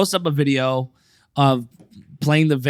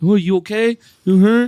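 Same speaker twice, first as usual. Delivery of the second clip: mock concern, higher and louder; 7 semitones higher, 4 dB louder than usual. Retelling the dad's viral video moment, imitating fake concern. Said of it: "putting up an act".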